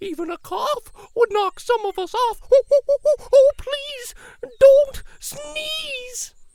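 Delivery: very high, loud, fretful, panicky cry. Narrator voices the monkeys in the trees: monkeys crying out. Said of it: "cried the monkeys in the trees".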